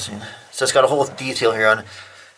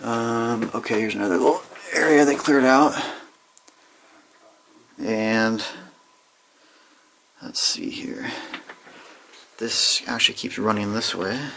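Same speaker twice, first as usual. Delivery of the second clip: gentle, hushed, soft and quiet talking. Talking while exploring the drift, soft voice until Chuck's away. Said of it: "I'm going to keep talking in a soft voice".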